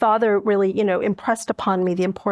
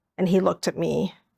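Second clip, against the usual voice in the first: ordinary talk, nothing marked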